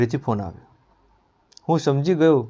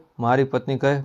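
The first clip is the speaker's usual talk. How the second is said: ordinary delivery, nothing marked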